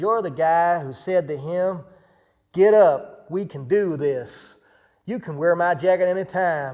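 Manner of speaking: loud, big, thick put-on Texas accent. Retelling a man's reply to a stranger's request, in a thick texas accent. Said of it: "with like a big, thick sort of Texas accent".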